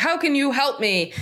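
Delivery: high-pitched, loud yelling. An agent retells a phone caller yelling at them: retelling a caller's yelling. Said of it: "he's yelling".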